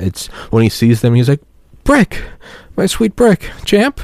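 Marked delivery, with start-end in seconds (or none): 1.8-4.0 put-on soft sad voice, higher pitch. Imitating Ron Burgundy greeting Brick: imitating Ron Burgundy, sad and soft. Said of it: "it's that very sad sort of beta".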